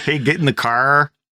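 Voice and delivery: thick East Coast accent. On a Twitch stream, showing off their thick accent, in a thick East Coast accent. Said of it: "I cannot believe how thick our accent is".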